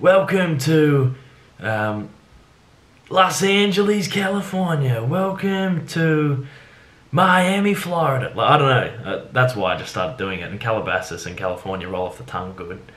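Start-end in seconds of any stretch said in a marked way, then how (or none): 0.0-8.3 very slow, drawn-out ring announcer voice, pitched up. Showing how boxing and MMA announcers open a show: boxing announcer voice. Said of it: "or M M A announcers will go".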